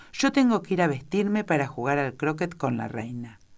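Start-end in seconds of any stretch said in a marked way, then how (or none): none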